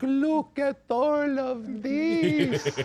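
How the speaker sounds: put-on very high, slow Eastern European accent. Retelling how a puppet dog talked: Eastern European immigrant accent. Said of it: "an Eastern European who's just landed on Ellis Island".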